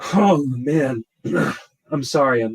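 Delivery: pretend emotional tone. Discussing a player's discount price, the speaker breaks off, mock-emotional. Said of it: "I'm feeling a little emotional".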